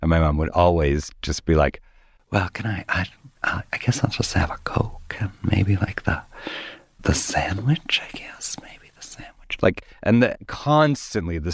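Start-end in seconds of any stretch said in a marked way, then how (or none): 2.3-9.6 whispered, halting, barely audible, faint. Retelling how mother ordered at a restaurant: imitating someone talking very quietly. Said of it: "she would talk very quietly".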